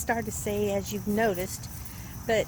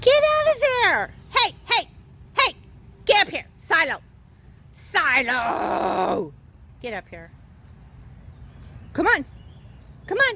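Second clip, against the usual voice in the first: stern, loud, swooping big mama voice; 7 semitones higher, 7 dB louder than usual. Calling Silo to get up here and come on, in a big mama voice. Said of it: "That's using my big mama voice".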